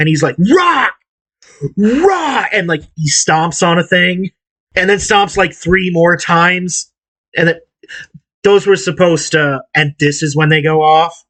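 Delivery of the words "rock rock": put-on yelling, pitched very high. Describing a stage show where the pyrotechnics fail, retelling him yelling rock. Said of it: "he starts yelling rock".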